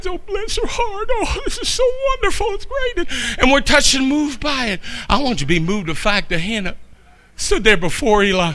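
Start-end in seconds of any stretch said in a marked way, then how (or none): 0.1-3.0 mock crying through words, very high, gushing. Retelling how the church reacted to Sister Minnie's testimony: imitating crying congregation. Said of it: "we're sitting there crying".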